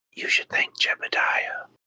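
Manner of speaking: close, very quiet, breathy whisper. Putting a hand on a wounded ally while healing him: whispering in character. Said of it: "put a hand on him and whisper".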